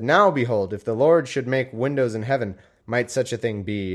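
plain

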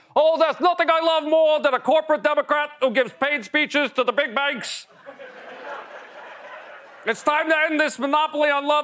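very high pitch, dripping with sarcasm. Imagining Bernie fawning over Hillary, doing a sarcastic Bernie Sanders impression. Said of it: "you'd know from his tone he was being sarcastic".

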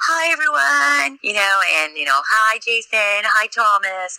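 very high, slow, teasing, mocking voice. Retelling how he mimicked the speaker's old live-feed greetings, imitating a mocking mimic. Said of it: "he was mimicking me from all my prior live feeds".

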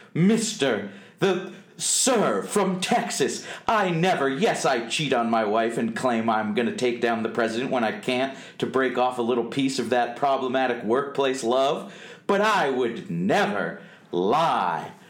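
put-on affronted, offended, indignant voice. Acting out how he answered the sir from texas, mock-indignant. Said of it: "indignance in his voice".

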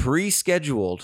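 "pre-scheduled" stressed, leaned on hard. Reporting on the Prime Minister's trip to the Yukon, stressing 'pre-scheduled'. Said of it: "I can't emphasize this word enough".

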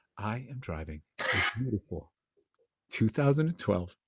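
calm murmur, very quiet and very low. Speaker teases Paul, imitating his answer in a mock-calm voice. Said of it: "your voice got all calm too".

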